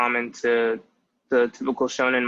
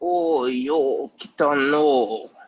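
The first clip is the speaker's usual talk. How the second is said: put-on slow, stretched, drawn-out old man voice; 3 semitones higher than usual. Speaker showing how the old man character talks, drawn-out old man voice. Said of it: "our old man, he sounds like this".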